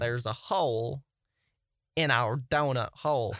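weak, slow, unconvincing Southern accent. Trying a Southern accent after another speaker asks for one: attempted Southern accent. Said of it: "I can't do it well".

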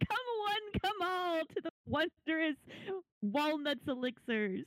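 high, calling-out shout to be heard far off. In a tabletop game, a player's character Walnut calls out to anyone near a shack, Walnut shouting out. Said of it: "starts shouting".

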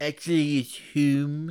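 put-on slow droopy cartoon voice. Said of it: "Who sounds like, like, Droopy Dog".

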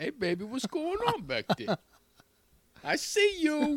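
very high-pitched voice, called out. Joking about a voice box that switches to Tracy Morgan, doing a Tracy Morgan impression. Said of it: "Can you do your Tracy Morgan?".

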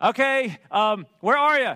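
mock fed-up, impatient, loud exasperated call. Retelling a lost call for help and the guy's reply: imitating someone exasperated. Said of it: "kind of exasperated at this point".

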